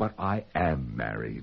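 mock innocent young woman voice. Describing how she answered, the speaker mimics her in her best ingenue voice. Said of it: "in her best ingenue voice said".

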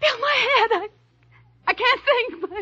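tearful. Trying to explain something to Bill, crying. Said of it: "someone's crying".

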